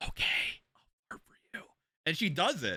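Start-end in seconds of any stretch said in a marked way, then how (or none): 0.0-1.6 soft, breathy whisper. Retelling a video where the speaker answers: imitating Alexa whispering back. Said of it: "she whispers back, she goes".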